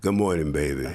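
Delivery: put-on sexy voice. Acting out a man greeting his wife from bed, sexy DL impression. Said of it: "you sound so sexy".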